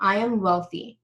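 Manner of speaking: firm tone, pitch falls at the end. Teaching listeners how to say a money mantra, demonstrating a falling command tone. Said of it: "your tonality will go down at the end".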